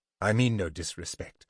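ordinary delivery, nothing marked

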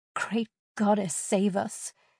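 ordinary talk

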